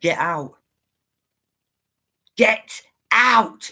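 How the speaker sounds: demonic voice with the words drawn out. Retelling what a voice shouted in the dark: imitating a demonic shouting voice. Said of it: "Really demonic".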